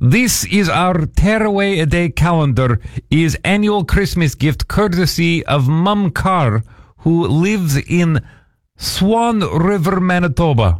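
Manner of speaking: put-on Russian accent. Showing a christmas gift calendar, a speaker talks in a russian accent. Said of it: "I'm speaking in a Russian accent".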